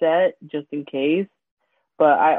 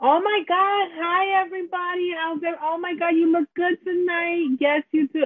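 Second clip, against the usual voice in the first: very high, loud, exaggerated, rambunctious put-on persona; 13 semitones higher than usual.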